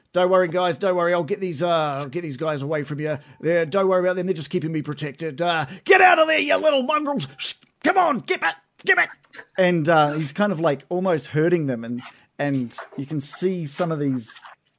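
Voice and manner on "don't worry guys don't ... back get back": high, swooping, calling-out character voice. Voicing a character who calls up while shepherding zombies: NPC calling up. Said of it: "he calls up".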